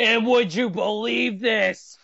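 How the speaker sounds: stretched-out, drawn-out ringside announcer call. Imagining the commentator calling a match seen many times: Michael Cole impression. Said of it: "you know Michael Cole's gotta be sitting there going".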